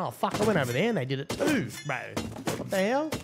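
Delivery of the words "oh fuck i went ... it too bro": plain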